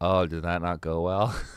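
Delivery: put-on flat monotone voice. Retelling a brother's reaction after a bad show: imitating Eric's flat voice. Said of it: "really flat when he talks".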